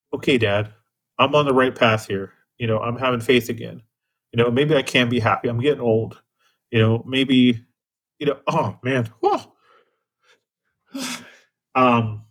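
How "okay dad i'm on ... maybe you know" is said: ordinary talk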